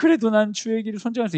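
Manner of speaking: tearful cow voice.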